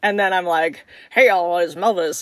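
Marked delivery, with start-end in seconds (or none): 1.1-2.2 goofy, silly put-on voice. Retelling getting into character as [name] at the mirror: goofy voice. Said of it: "do some goofy voice".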